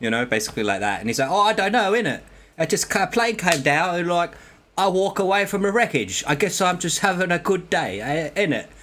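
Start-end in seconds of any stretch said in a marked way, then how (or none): 1.3-8.6 put-on English accent, higher, slower. Retelling what a man said after walking away from a plane wreck, imitating an English accent. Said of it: "then I do the English accent".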